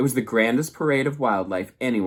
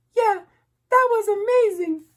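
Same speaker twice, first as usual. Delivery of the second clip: tiny, very high, squeaking gosling voice; 4 dB louder than usual. Narrator voicing the gosling's reply to the robot, in a squeaky gosling voice. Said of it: "squeaked the gosling".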